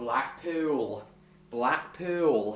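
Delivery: put-on Lancashire accent. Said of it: "I may try and use this voice".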